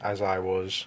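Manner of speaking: ordinary delivery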